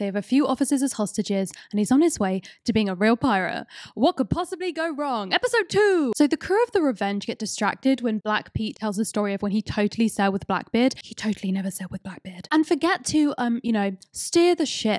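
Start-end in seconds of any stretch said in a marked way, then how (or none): 11.0-12.5 whispered aside, quieter. Recapping episode two of a show, the speaker drops a whispered aside.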